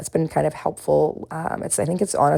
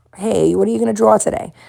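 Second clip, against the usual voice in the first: exaggerated put-on Boston accent, higher; 6 semitones higher than usual. Struggling to say the word drawer, then trying an exaggerated Boston accent. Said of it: "And that was just what that sounded like".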